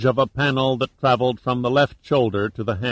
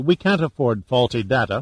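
plain

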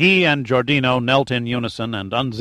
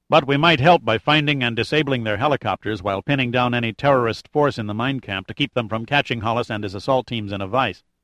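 usual speaking voice

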